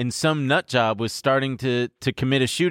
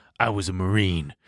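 mock stern and serious, lower pitch; 5 semitones lower than usual. Retelling what a silent friend said unprovoked: imitating a stern, serious friend. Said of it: "stern and serious".

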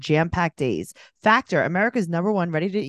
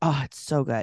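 put-on swooning, lower pitch; 4 semitones lower, 3 dB quieter than usual. Retelling how a woman swooned over a man's voice: imitating swooning. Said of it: "she's like swooning over his voice".

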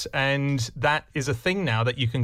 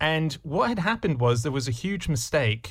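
ordinary delivery

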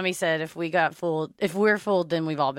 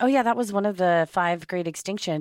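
put-on casual tone, faster. Recalling a chat about dinosaur extinctions, the speaker imitates Paris's nonchalant tone. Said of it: "Paris just nonchalantly went".

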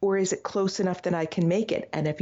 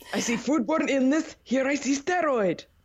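put-on Russian accent, higher pitch; 5 semitones higher than usual. Voicing a man looking in a microscope during a food-safety bit, in a Russian accent. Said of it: "I don't know why I just made him sound Russian".

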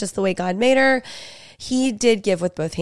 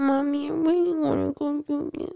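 put-on high, soft, whiny little-kid baby voice; 7 semitones higher, 5 dB quieter than usual. Mocking four-year-olds asking their mommy for something, imitating a baby voice. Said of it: "like babies".

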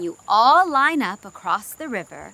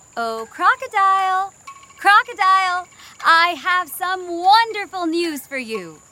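high, friendly voice calling out; 7 semitones higher than usual. A narrator reads Mouse Deer calling out to Old Crocodile in the river: friendly voice. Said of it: "called out in a friendly voice".

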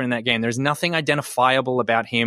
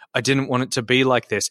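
usual speaking voice

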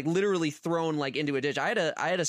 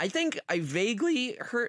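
voice breaking and cracking high mid-sentence; 7 semitones higher than usual. Talking with others about someone, voice cracking. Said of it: "Ugh, voice crack".

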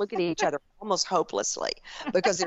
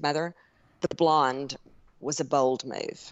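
mock bone-dry deadpan, low and slow; 4 semitones lower than usual. Retelling what a daughter often says to her: imitating a dry delivery. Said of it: "real dry expression".

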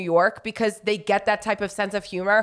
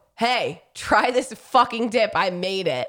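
mock rude, imitated tone. Acting out how another speaker offered a dip: imitating a rude offer. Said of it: "I didn't say it like that".

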